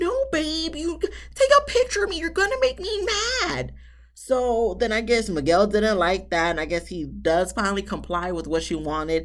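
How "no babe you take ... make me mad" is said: voice pushed up to very high pitch. Act out Lindy objecting when Miguel tries to take a selfie, in Lindy's high-pitched voice. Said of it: "in her high-pitched voice and says".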